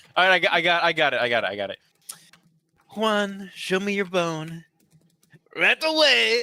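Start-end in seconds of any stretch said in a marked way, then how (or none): 3.0-6.5 very slow, very drawn-out fake Mexican accent. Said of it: "why did he sound like Trump imitating a Mexican person".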